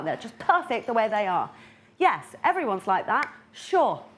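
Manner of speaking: sarcastic, fake-agreeable, swooping delivery. Describing people who seem to know everything from birth: sarcastic. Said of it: "That was sarcasm".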